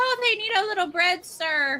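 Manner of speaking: street woman voice. Retelling what the woman of the street said: imitating the street woman. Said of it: "So she said".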